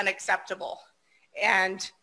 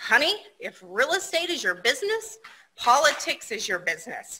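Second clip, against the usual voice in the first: swooping put-on Texas accent; 3 semitones higher than usual. Retell Pat Brewer's reply to you at a conference, in Pat Brewer's Texas accent. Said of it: "replied in her Texas accent".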